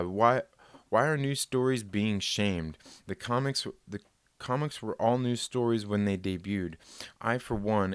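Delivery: ordinary talk, nothing marked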